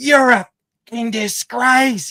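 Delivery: acted, very high, shrill, loud old lady's yell. Retelling an older lady in the crowd yelling at the umpires: imitating an old lady yelling. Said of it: "She was yelling to the umpires".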